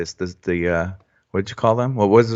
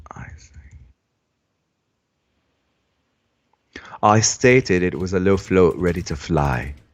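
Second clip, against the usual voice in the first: snippy, pissy, put-on British accent; 3 semitones lower than usual. Rereading a sentence they wrote, the speaker uses a pissy british accent. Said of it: "I read that in in a British accent".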